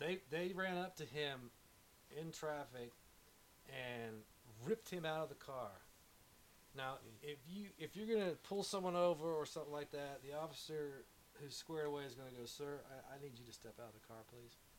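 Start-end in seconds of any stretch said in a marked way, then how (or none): 12.5-14.6 calm, flat, non-threatening, low, soft, level monotone. Showing how a composed officer asks a driver out of the car: low, monotone, non-threatening. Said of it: "it's this low, right, monotone, non-threatening".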